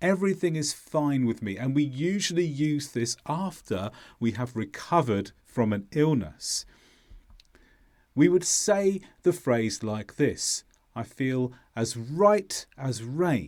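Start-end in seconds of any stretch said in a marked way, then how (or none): 10.9-13.5 words right and rain strongly stressed. Teaching a phrase used after recovering from illness, stress on right and rain. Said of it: "So the stress is on right and rain".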